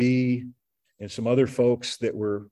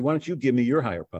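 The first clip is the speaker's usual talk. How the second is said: quick, half-kidding joking tone. Retelling his own reply to a man's suggestion: retelling a joking request.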